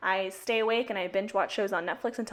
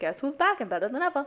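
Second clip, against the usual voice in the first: pitched-up, cocky, put-on arrogant swagger; 5 semitones higher than usual. Explaining an earlier line that came off arrogant, in a mock-arrogant voice. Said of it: "I was trying to make that voice like".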